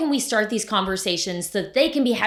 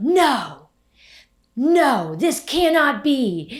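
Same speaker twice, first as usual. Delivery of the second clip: put-on pushy, aggressive tone, loud and pitched up; 5 semitones higher, 5 dB louder than usual. Retelling what a woman in front of them said, imitating a woman's aggressive voice. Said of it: "she had an aggressive voice".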